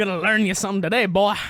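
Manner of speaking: put-on old-timey wisecracking 1940s tough guy voice. Imitating a huge character who already beat someone once: wisecracking 1940s man voice. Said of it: "in wisecracking forties man".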